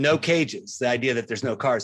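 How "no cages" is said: usual speaking voice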